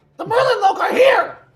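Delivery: very shrill, very loud, very high, obnoxious annoying voice. Speaker takes a turn after apologizing for a delay, in their most annoying voice, loudly. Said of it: "in my most annoying voice, loudly".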